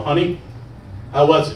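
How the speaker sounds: ordinary delivery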